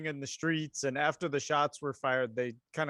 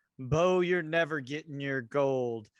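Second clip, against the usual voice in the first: wicked, cackling villain voice through the words. A storyteller voices Jack taunting the player's character Bo, cackling as Jack. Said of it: "he cackles and he says".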